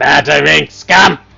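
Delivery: very loud rough rasp. Narrating, the speaker voices Cobb reluctantly answering the group: Cobb's rasping voice. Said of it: "his voice rasps out".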